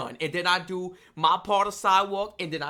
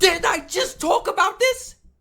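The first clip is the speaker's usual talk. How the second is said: full-on loud yelling, pitched very high; 6 dB louder than usual. A speaker complaining about the coming season, yelling. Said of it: "I'm sorry if I'm yelling".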